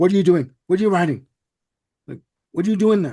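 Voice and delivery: mock yelled, loud, high and demanding. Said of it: "Waters comes in and yells at".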